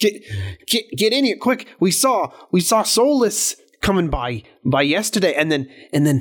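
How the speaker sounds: fake Scottish accent. Speaker voices a character in a group role-play, in a bad Scottish accent. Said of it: "That's [name]'s opinion of a Scottish accent".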